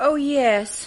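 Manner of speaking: unenthusiastic, not overjoyed. Answering whether the ball was nice: not overjoyed. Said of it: "You don't sound overjoyed".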